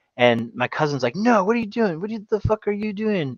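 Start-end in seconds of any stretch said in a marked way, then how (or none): 1.2-3.4 mock, high-pitched yelling. Retelling how a cousin stopped them getting in the boat: imitating someone yelling. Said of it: "he, like, yelled at us".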